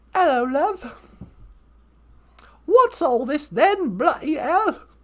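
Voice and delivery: put-on British accent. Praising the English after the French and Irish: put-on English accent. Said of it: "best overall language and accent".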